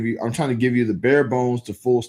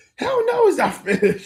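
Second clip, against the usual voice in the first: mock angry, mad tone, higher. Reading a viewer's message aloud in their voice: imitating a viewer sounding mad. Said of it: "I read that in your voice".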